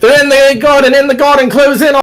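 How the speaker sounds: shouting pitched way up. Describing what the players will start hearing, the speaker imitates guards shouting. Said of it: "You're gonna start hearing them shouting like".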